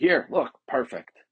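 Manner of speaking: condescending, manipulative, talking-down tone. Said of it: "in this sort of condescending, manipulative way".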